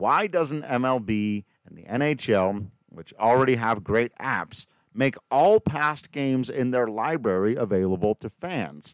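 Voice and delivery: ordinary talk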